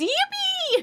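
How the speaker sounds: very high, squeaky squealed delivery. Retelling what a full-grown woman says at the store: imitating a full-grown woman. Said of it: "she goes".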